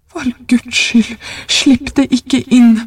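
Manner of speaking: put-on old man voice, high, shaking, trembling outcry. An old man, holding back a woman who fights to get free, cries out trembling. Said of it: "ropte den gamle mannen skjelvende".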